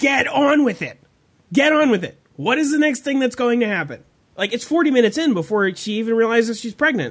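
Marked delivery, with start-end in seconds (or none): 0.0-4.0 mock impatient, fed-up yell. Telling about watching a film, re-enact shouting at the screen. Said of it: "I was shouting at the screen".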